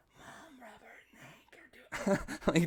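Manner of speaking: loud, clumsy, badly hushed stage whisper. Retelling a brother telling on siblings to mom: imitating a brother's bad whisper. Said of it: "you're the fucking worst whisperer on the planet".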